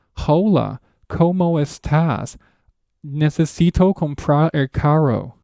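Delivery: very slow, overdone English accent on Spanish. Mimicking native English speakers trying Spanish: exaggerated English-speaker accent. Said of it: "native English speakers try to speak Spanish, they sound something like this".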